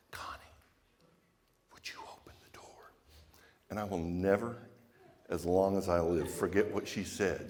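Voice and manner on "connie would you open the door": hushed, soft, barely voiced whisper. Retelling leaning over to ask for the door to open: retelling a whisper. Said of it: "lean over and whisper to Connie".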